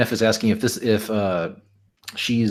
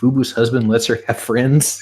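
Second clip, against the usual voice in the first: ordinary delivery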